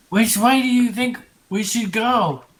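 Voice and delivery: very loud, high whisper-yelling. Exploring a dark tunnel in a game, the player's character whisper-yells to the group. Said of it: "whisper yelling and very loudly".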